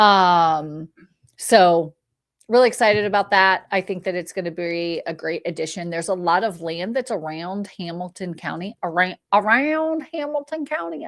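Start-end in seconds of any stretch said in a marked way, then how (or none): 8.8-11.1 country accent, pitched high. Speaker describing companies coming to the area, sounding like a country girl. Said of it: "I sound like a country girl".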